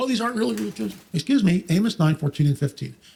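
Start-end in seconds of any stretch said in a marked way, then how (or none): 0.0-0.9 high, mocking, scoffing skeptic voice. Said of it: "they, they".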